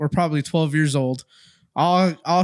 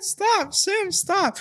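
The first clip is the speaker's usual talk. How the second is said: very high, crying, pleading through tears. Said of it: "Kyle's all crying like".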